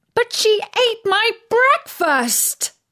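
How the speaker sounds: very high, shrill, high-pitched shout. Narrator reads a girl protesting to her mum at the breakfast table, shouting. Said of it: "shouted Daisy".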